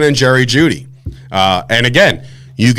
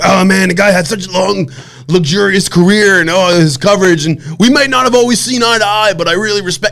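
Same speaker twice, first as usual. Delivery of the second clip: put-on high, dopey, dim-witted, falsely sincere voice; 6 semitones higher than usual. Mocking a fake tribute to a rival in a dumb voice. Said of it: "giving a voice as if you were imitating yourself and you were sounding dumb".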